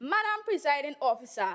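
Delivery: ordinary talk, nothing marked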